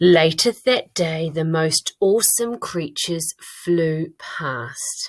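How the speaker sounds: very slow, deliberate reading, word by word. Reading their own writing aloud to catch mistakes, reading very slowly. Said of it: "I'm going to read it really slowly".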